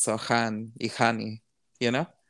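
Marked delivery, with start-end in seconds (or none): 0.2-1.4 put-on natural Spanish accent, quieter and slower.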